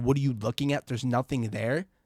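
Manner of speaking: usual speaking voice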